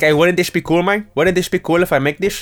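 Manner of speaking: put-on Colombian crime boss voice. Acting out a drug dealer proposing a gold statue: put-on Colombian drug dealer voice. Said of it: "my voice of, uh, the spirit of Colombia".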